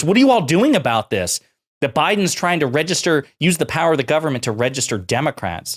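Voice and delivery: anxious, alarmed tone. Quoting her question back: imitating Maria Bartiromo's panicked voice. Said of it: "you can hear the panic in her voice".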